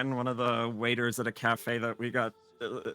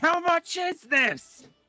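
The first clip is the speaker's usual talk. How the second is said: put-on very high, slow, drawn-out yell, heavy German accent; 7 dB louder than usual. Retelling a man asking a local guy a price in broken Italian: mimicked yell, strong German accent. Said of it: "in broken Italian with a very strong German accent".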